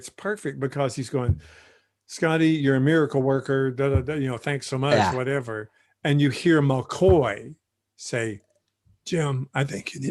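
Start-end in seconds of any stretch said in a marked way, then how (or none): 9.1-10.1 soft, choked-up, tearful voice. Retelling a scene's dialogue while getting choked up. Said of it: "I'm getting choked up now".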